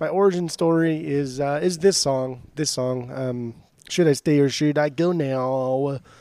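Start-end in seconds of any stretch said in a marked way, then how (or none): none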